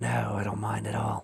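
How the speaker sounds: put-on low raspy voice with British accent. Narrator voicing a tentacled creature answering a researcher, low raspy british voice. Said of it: "A low, raspy voice hinted, with a British accent".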